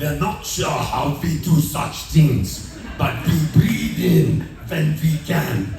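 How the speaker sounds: slow, attempted Irish accent. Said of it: "I'll do my best Irish accent".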